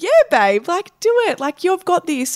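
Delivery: very high, swooping, cheering cheerleader hype-up voice. Acting out the inner cheerleader that starts cheering you on: inner cheerleader voice. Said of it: "your inner cheerleader comes out and she just starts going like".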